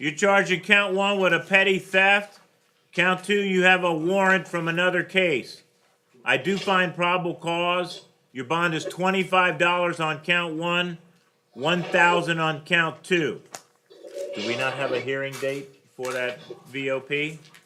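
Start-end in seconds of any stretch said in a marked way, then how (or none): 0.0-13.4 higher, louder, slow projection. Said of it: "Can you speak up a little bit?".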